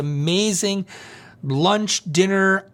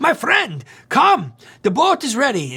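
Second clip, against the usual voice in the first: put-on Greek accent, sing-song; 6 semitones higher, 3 dB louder than usual. Retelling what a boat captain said on seeing him on a bench, Greek accent. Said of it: "that's my Greek accent".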